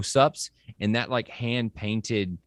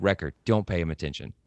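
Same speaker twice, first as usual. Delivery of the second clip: robotic, droid-like delivery; 3 semitones lower than usual. Quoting Tech, who talks like a droid: robotic Tech voice. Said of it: "He basically talks like a robot".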